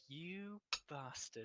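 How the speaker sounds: very quiet mutter under the breath. Speaking in character to the Sphinx after a riddle, muttered under breath. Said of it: "Under my breath, I say".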